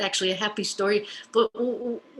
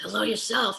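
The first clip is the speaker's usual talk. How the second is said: put-on, imitated raspy voice. Retelling a phone call, quoting the father's greeting: imitating father's raspy voice. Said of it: "in that raspy".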